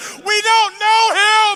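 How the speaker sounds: acted-out, shrill, very high screamed blurt. Retelling a family story to an audience, imitating Sam screaming. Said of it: "my older brother Sam screams out".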